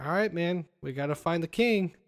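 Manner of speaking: normal talking voice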